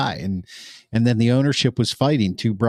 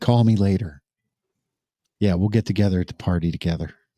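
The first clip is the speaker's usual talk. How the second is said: put-on whisper, lower; 3 semitones lower than usual. Imitating someone whispering during a hug: imitating Goodell whispering. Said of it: "He's whispering".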